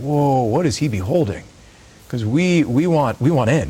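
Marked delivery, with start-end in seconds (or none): none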